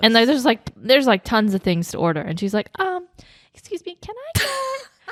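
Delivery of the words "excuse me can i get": tiny, very high, very slow, timid voice. Retelling how she ordered nachos at a fancy restaurant: imitating a very little voice. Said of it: "she like somehow has like this very little voice".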